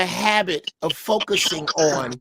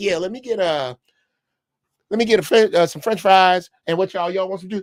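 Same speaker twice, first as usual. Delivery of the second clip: easygoing, unbothered, casual offhand tone. Retelling how granddaddy delivered a threat at church: imitating granddaddy's casual offhand tone. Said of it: "And he said it like".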